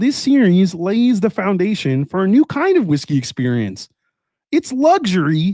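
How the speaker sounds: high-pitched cartoon frog puppet voice. Reading a product description aloud, in a Kermit the Frog voice. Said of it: "switch that up with a little Kermit the Frog".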